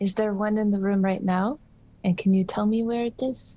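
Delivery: hushed whisper. Asking an ivy plant in a haunted place a question: whispering. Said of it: "pull a leaf as close as possible to my face and whisper".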